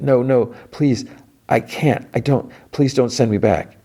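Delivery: high, tearful pleading. Speaker retells how an intimidating man scared a little girl, imitating Lily's tearful pleading. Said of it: "she's got tears".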